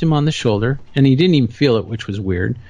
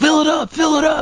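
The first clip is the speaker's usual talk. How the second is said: mock shrill scream, very high. Retelling a man at a gas station: imitating a man screaming. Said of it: "And he's screaming".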